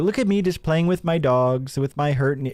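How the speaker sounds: sarcastic mocking put-on impersonation. Reacting to a video, mocking the dog owner: mocking imitation of him acting relatable. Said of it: "He's like".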